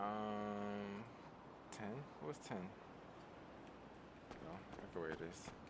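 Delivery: very soft whisper.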